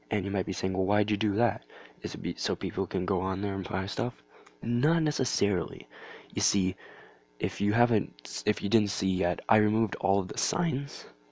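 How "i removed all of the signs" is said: voice breaking. Speaking to viewers in a video, voice cracking. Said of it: "voice crack".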